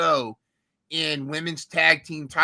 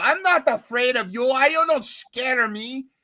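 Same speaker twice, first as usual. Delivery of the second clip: put-on heavy Brazilian accent, defiant, slow and high; 8 semitones higher than usual. Retelling a wrestler's angry line in a match: imitating thick Brazilian accent. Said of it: "her Brazilian accent gets thick".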